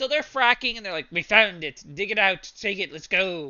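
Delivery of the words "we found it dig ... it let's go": convincing, spot-on put-on English accent. Retelling what the people fracking say when they find it, english accent impression. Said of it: "Tim is nailing that accent".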